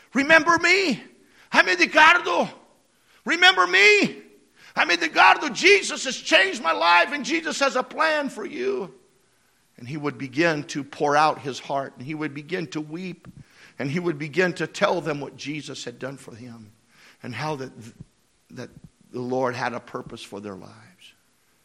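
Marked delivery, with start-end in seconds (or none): 0.2-9.0 high, loud, bright, eager calling out. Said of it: "he would say".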